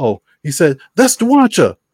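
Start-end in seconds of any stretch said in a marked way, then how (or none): 0.9-1.7 shrill, high, loud shout blurted out. Retelling how a guy in the theater yelled: imitating a guy yelling out. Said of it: "dude yells out".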